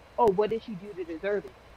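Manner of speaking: normal talking voice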